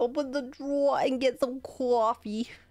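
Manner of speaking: put-on Long Island accent woman. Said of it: "you could be a Long Island Italian woman".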